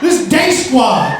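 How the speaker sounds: put-on aggressive, drunken, high yelling bravado.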